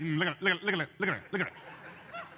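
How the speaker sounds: nagging, needling, insistent, goading repetition. Showing how the devil talks inside your head: imitating the devil talking fast. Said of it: "he talks fast like that too".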